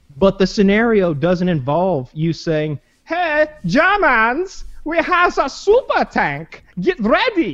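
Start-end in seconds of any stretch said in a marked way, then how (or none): 3.0-7.6 put-on very high, slow, drawn-out German accent. Acting out a hypothetical announcement to the enemy, imitating a german accent. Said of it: "Why would you have a German accent".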